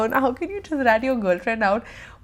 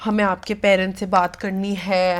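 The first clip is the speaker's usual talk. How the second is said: imitated very serious tone, lower; 4 semitones lower than usual. Recounting how their dad confronted someone, imitating dad's very serious tone. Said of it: "in his like very like serious tone".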